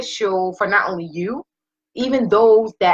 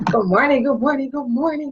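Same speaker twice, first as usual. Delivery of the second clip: restrained, reined-in, pitched-up voice, careful not to boom; 6 semitones higher than usual. Greeting the audience with a roommate asleep nearby, keeping quiet. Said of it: "I can't be too loud".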